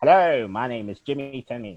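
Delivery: loud, big mid-Atlantic accent. Describing an accent, then demonstrating it in a mid-Atlantic accent. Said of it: "they called it the mid-Atlantic accent".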